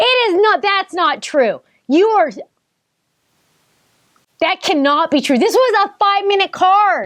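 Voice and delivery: yelling in very high register. Reacting to a result someone shows on a card, yelling. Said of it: "Sorry, I'm yelling".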